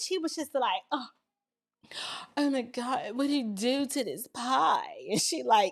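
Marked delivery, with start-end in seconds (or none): 0.9-4.8 prim, prissy little exclaiming voice. Retelling a movie scene, imitating a prissy woman.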